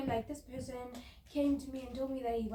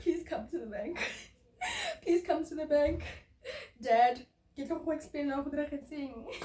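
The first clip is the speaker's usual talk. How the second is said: crying, tearful delivery; 3 semitones higher, 4 dB louder than usual. Retelling begging dad to come to the bank: imitating own past crying plea. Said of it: "At that time, I'm crying".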